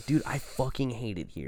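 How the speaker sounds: angry tone. Recalling wanting to get out, re-enacting being so pissed. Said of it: "I was, like, so pissed".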